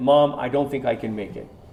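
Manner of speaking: plain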